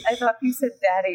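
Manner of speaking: ordinary talk, nothing marked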